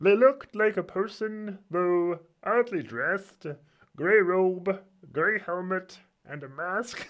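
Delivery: high frog puppet voice. Reading a passage aloud, trying it in a Kermit voice. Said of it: "I'll try and read a line in Kermit".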